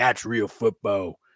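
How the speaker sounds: loud, fired-up rant. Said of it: "I kept telling her, like".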